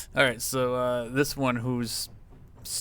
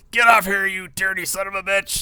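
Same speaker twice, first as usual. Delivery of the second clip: orc yell, pitched up; 8 semitones higher, 9 dB louder than usual. The game master voices an orc yelling at a player's character. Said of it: "he's like yelling something in Orcish at you".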